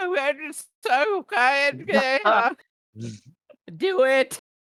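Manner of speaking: very high, very loud, drawn-out, near-incoherent garble. Voicing a character casting bardic inspiration: almost incoherent character voice. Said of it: "almost incoherent, like".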